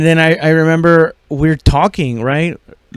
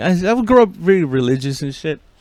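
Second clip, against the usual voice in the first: normal talking voice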